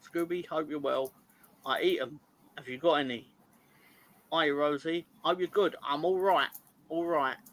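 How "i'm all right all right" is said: put-on Cockney accent, louder. Giving shout-outs and voicing someone's reply, in a cockney accent. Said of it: "I gave him a Cockney accent there".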